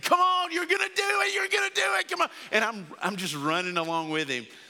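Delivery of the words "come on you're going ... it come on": very high, loud yelling cheer. Retelling running the last 100 yards of his race beside him, retelling own yelling. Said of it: "I'm yelling at him and I'm screaming".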